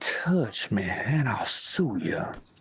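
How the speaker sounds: extra sassy. Asked to redo the line with a lot more sass; with a lot more sass. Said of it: "let's hear it".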